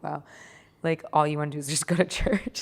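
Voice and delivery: play-acted, amused talking through a laugh. Retelling how Daddy answered a sick child's request: imitating father laughing while talking. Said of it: "he just laughed at me like".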